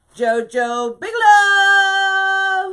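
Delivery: yelling excitedly. Speaking on a live stream, calling out a name, excited yelling. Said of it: "Am I yelling?".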